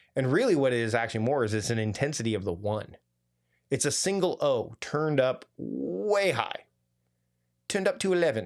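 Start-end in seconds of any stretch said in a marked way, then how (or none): 7.7-8.5 badly done put-on British accent, high-pitched. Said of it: "that was a bad bad British accent".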